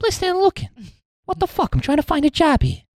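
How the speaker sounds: put-on high-pitched, laid-on-thick Boston accent. Playing a job seeker questioned at an office, doing a Mark Wahlberg impression. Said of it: "You're doing Mark Wahlberg again".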